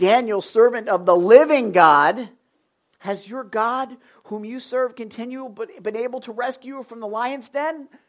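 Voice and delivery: anguished, grief-stricken, almost weeping voice. Acting out a man calling down into the lion's den, in a mock-anguished voice. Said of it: "He in an anguished voice".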